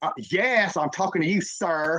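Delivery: put-on sassy, put-out tone, heavy attitude on sir. Retelling how a woman called out to him: imitating someone saying sir with attitude. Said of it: "say the word sir with an attitude".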